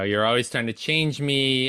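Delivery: ordinary delivery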